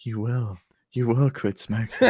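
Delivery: hypnotic audiobook voice. Joking about audiobook careers, speaker mimics a hypnosis self-help tape: hypnotizing audiobook voice. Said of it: "hypnotizing ones".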